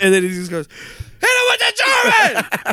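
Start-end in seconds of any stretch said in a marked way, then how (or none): 1.2-2.7 acted-out, very high, shrill yell. Retelling what a big fan behind them yelled: imitating a loud fan shouting. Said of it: "Like that".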